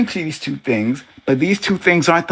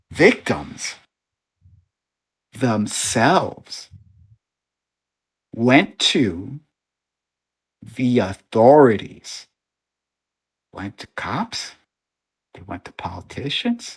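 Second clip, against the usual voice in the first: very slow, low, deliberate, one syllable at a time; 6 semitones lower, 4 dB quieter than usual. Repeating his point to someone who misunderstood: very slow, syllable by syllable. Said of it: "I'll say it very slowly".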